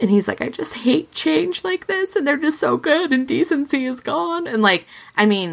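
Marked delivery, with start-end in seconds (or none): 0.4-4.5 very high, tearful, sobbing crying voice. Retelling what someone said after he started crying hard: imitating someone crying hard. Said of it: "he starts crying hard".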